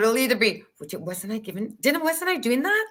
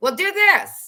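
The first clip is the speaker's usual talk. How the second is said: put-on loud, pitched-up, yelled-out director voice; 8 semitones higher, 5 dB louder than usual. Retelling how directors called out a direction: imitating a director yelling. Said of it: "yell out".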